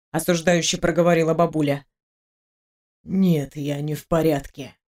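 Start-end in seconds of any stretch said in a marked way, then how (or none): 3.0-4.6 faint whisper, lower and slower. Narrator answering a woman so she comes closer, barely audible whisper. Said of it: "прошептал едва слышно".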